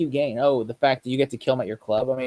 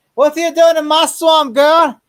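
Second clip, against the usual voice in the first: shrill, booming ogre bellow, very high and very loud; 14 semitones higher, 9 dB louder than usual. Joking about a killer called the Ogre: Shrek voice. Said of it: "Like Shrek".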